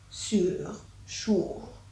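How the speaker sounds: soft, attempted French accent on "sure". Asked how to say sure in a French accent, trying it: French accent. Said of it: "say sure in a fucking French accent".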